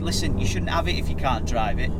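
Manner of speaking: ordinary talk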